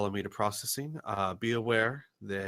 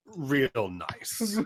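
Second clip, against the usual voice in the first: tight-lipped, curt, indignant headmaster voice, pitched up; 5 semitones higher, 4 dB louder than usual. Voicing an indignant headmaster walking away: indignant headmaster, tight-lipped. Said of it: "lips getting thinner and thinner as he presses".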